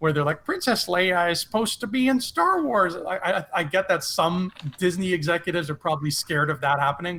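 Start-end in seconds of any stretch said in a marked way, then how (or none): 0.4-3.0 put-on little old lady voice. Imitating a casual star wars fan, in an old-lady casual fan voice. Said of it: "that's a casual fan voice for you".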